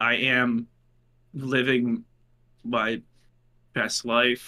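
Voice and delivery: very slow, drawn out, with pauses. Telling another speaker how life is going: said slowly. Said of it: "You said that so slowly".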